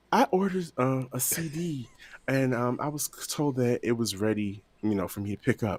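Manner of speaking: put-on smooth raspy voice. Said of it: "in that same smooth, raspy voice".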